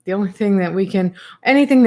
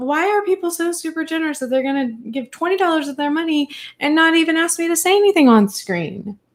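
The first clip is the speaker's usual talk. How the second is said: high, mock-indignant, fake annoyance, all for show; 8 semitones higher than usual. Thanking viewers for a twenty dollar super chat: mock angry. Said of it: "I say that like I'm mad at you".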